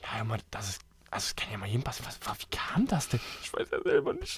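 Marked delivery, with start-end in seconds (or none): 2.0-4.4 tearful speech, words broken up by weeping. In a scene, a character who just lost their job is told not to cry: crying. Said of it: "aber du musst ja jetzt hier nicht weinen".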